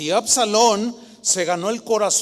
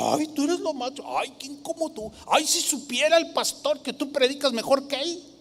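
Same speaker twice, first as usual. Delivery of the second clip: fawning, over-the-top gushing voice, high pitched; 7 semitones higher, 4 dB quieter than usual. Warning listeners about flatterers, imitating a flatterer. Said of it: "¿Saben lo que es una persona lisonjera?".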